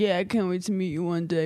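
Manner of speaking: put-on drunk man voice. Speaker retelling what a guy said on FaceTime, imitating a drunk guy. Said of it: "Why does that voice always have to be, like, drunk?".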